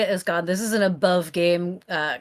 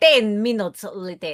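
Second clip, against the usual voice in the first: put-on heavy French accent, laid on thick throughout. Suggesting how the phrase should be voiced, in a thick French accent. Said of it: "do the thick French accent".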